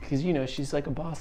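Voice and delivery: ordinary talk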